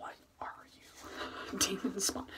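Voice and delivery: gentle, unhurried whisper.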